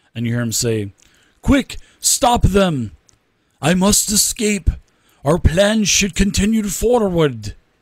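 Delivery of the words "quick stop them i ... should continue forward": put-on barked Russian accent. Voicing the red-robed individual as he tries to escape, weird Russian-type accent. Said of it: "he has a weird like Russian type of accent".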